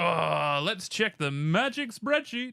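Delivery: showy put-on game show host announcer voice. Talking over past results with another speaker, in a game show host voice. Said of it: "I don't know why I did that voice".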